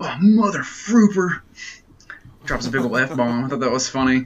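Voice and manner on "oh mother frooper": loud, high-pitched, blurted out. Retelling the close-up after the match: imitating Triple H cursing. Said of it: "he's just like".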